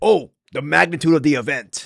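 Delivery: awestruck, marveling, full of wonder. Mocking how Joe Rogan described the event: imitating Joe Rogan in awe. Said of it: "he sounds like he's in awe".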